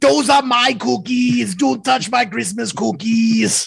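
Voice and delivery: rough, creaky tough-guy voice. Joining in a bit about a Christmas movie, doing an Arnold impression. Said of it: "that sounds just like Arnold".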